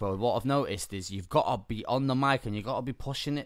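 ordinary talk

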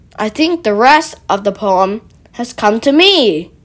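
plain reading voice

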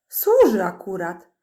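contemptuous, scornful little snort. A hidden listener snorts in reply to elves searching for a spy. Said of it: "prychnął Bilbo".

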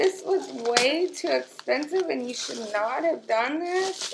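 on the verge of tears. Unwrapping an expensive gift, telling the giver they shouldn't have, about to cry. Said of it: "I am about to cry".

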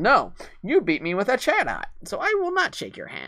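high, strange voice with wide swooping pitch swings. Retelling a man refusing to shake hands after losing a match, in a vaguely Joker-like voice. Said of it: "what his voice sounded like".

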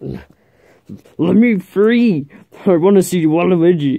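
mad, strange-sounding voice. In a Mario role-play, a captive player demands to be let free: angry, strange-sounding voice. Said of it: "Is there something wrong with your voice?".

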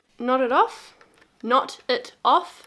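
loud, atrociously bad New Zealand accent. Speaker instructs viewers while working on a seam, in a bad New Zealand accent. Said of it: "my New Zealand accent is atrocious".

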